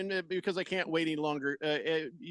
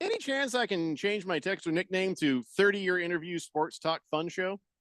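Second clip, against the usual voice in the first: ordinary delivery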